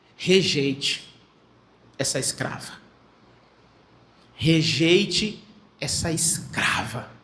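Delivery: mock hushed, very slow, heavy-handed delivery. Recapping a telenovela scene, the speaker acts out Sara's words to her: Sara's intonation, as imagined. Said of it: "é desse jeito que ela está falando, com essa entonação".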